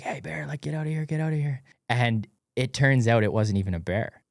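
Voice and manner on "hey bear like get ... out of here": mock high-pitched yell. Retelling yelling at a bear to get out: imitating yelling at a bear. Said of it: "yelling at it".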